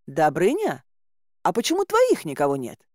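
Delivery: astonished, taken aback. Narrator voicing a woman questioning a companion, surprised. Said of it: "удивилась я".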